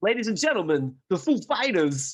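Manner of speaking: loud stage announcer voice. Introducing a rock band as in an impression: Christopher Walken impression. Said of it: "this is Christopher Walken introducing".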